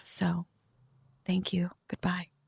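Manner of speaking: very soft, hushed, soft-spoken voice. Retelling how the speaker turned away a woman wanting to see her mom, in a soft voice. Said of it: "included like a soft voice and saying thank you".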